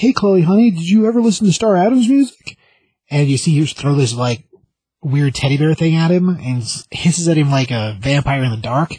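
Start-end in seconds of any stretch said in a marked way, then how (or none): 0.0-2.6 high, sweet, gentle, wheedling coaxing dad voice. Retelling how a dad coaxes his teenage daughter at her door; imitating a coaxing dad. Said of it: "And he's like".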